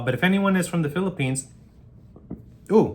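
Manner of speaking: sudden involuntary hiccup breaking in mid-sentence. Speaking to viewers of a video, caught mid-sentence by hiccups. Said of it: "sorry, I have hiccups".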